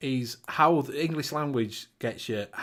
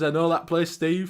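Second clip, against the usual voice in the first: ordinary delivery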